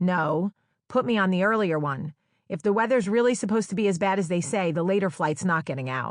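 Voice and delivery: ordinary talk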